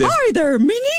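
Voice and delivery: squeaked out in a very high-pitched voice. Touring horticultural character displays with a companion, Mickey Mouse voice. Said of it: "did his got, voice".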